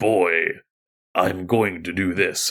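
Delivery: rough, gruff, low, slow delivery. Describing a character type in a film moment, demonstrating a gruff low voice. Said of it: "you have the gruff, um, uh, low voice".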